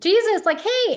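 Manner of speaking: shameless, unapologetic, loud, very high-pitched yell. Retelling the blind man calling out to Jesus despite the crowd, retelling a loud yell. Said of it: "he was unapologetically like loud".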